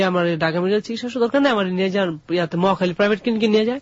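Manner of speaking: plain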